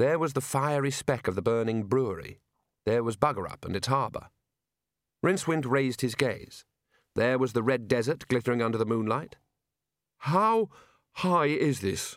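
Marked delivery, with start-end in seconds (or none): 10.2-12.2 very slow, hoarse croak, pitched up. Looking down over the edge from high up, he asks, croaking. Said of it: "he croaked".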